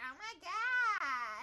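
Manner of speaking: put-on loud, high-pitched, big valley girl voice. Mocking their own earlier greeting, Lois Griffin valley girl voice. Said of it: "cougar version of a valley girl".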